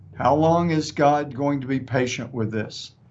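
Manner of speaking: normal talking voice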